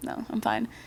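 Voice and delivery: very soft, hushed, not breathy, quiet.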